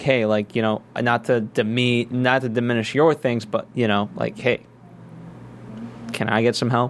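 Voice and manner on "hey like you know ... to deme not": ordinary delivery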